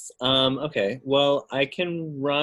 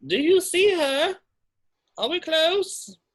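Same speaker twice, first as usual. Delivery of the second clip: loud, high-pitched yelling. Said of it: "I'm gonna yell to Gerald".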